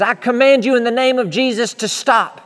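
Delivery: high, loud, desperate, forceful delivery. Retelling a vision, commanding a demon to stop: imitating a desperate command. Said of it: "out of desperation".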